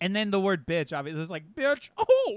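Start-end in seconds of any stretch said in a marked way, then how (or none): 1.6-2.4 badly done, loud, high, shrill yelp. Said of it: "It's bad".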